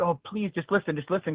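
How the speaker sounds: acted desperate pleading tone. Acting out what he might say to her: acting out a desperate plea. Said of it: "you sound desperate".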